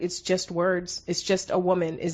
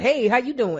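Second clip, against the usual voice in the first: higher-pitched, fake, put-on slangy talk; 5 semitones higher, 3 dB louder than usual. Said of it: "They go like".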